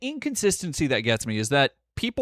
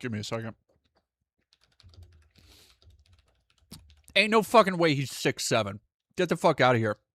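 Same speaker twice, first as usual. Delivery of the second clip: speaking while chewing, mouth full of food. Responding to the previous speaker, talking while still chewing. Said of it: "sorry, I'm still chewing".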